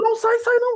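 put-on panicked, very high-pitched, desperate yelling in despair. Showing how they yell during horror games: imitating a desperate yell. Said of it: "eu grito".

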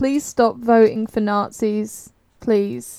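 exasperated, weary, at wit's end. Asked for a catchphrase to break out of Castle Wolfenstein, the speaker pleads at wit's end. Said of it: "I'm at my wit's end".

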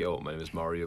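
mock icy, very cold, flat and unfriendly. Retelling how other models introduced themselves at castings: imitating a very cold introduction. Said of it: "very cold".

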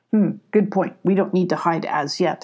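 plain reading voice

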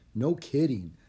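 usual speaking voice

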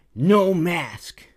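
worked-up, high blurt. Retelling a stranger confronting them about a mask: imitating a man in a tizzy. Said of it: "he's all just in a tiz".

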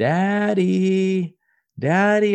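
put-on very high, sweet, cute, drawn-out toddler voice. Father retells his toddler calling for him from her room, imitating toddler's cute call. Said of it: "she yells for me from the room in this really cute voice".

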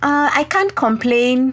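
put-on Kenyan English accent. Kenyan speaker quoting a typical reply to how are you, Kenyan accent. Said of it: "Said with a Kenyan accent".

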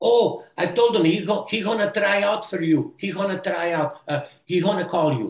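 put-on Belgian accent. Retelling his mom's phone call about a movie tryout, in her Belgian accent. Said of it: "with her Belgium accent".

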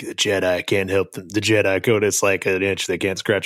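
ordinary talk

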